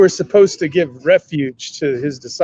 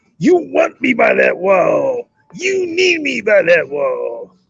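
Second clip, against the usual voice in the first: slow, rough, drawn-out swooping drawl; 5 semitones higher than usual. Doing an impression of a film line: Jack Nicholson impression. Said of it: "Let me see if I can do it better".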